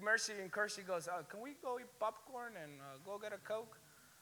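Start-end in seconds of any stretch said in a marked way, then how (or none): 1.1-3.8 mock-indifferent, unbothered, much quieter voice. Retelling what two friends said right after the sighting, in a put-on indifferent tone. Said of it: "They didn't care".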